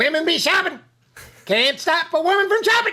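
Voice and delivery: very high, hollered comedic yell. Answering another speaker's request to yell a line: yelling in Chappelle voice. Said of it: "in your Chappelle voice, yell".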